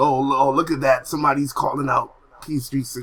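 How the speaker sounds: normal talking voice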